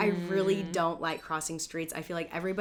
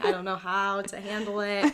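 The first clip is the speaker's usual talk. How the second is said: mock breathless, out-of-breath voice; 3 semitones higher, 3 dB louder than usual. Acting out answering a phone call: pretending to be out of breath. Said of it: "I'd probably answer the phone out of breath".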